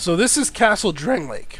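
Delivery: cracking voice. Player narrating his game while playing, voice cracking. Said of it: "Sorry about the voice crack there".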